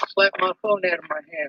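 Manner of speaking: ordinary talk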